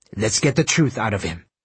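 plain

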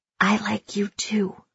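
whispered voice. The narrator answers a tearful girl, whispering in her ear. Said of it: "I whisper in her ear".

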